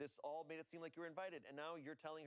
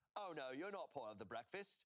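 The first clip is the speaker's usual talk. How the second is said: put-on British accent. Acting out what the bride said, in a put-on British accent. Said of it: "done it in a British accent".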